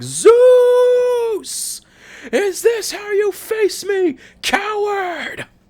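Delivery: very high, slow scream, "Zeus" drawn out. Imagining losing it after a power cut, screaming as Kratos. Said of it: "turned into fucking Kratos for a minute and be screaming like".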